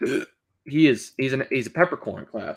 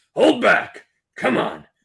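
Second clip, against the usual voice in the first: scraped, rough, throat-straining scruffy rasp; 8 semitones higher, 4 dB louder than usual. Speaker doing a character voice that hurts their throat; throat-straining put-on voice. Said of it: "It hurts to do that voice".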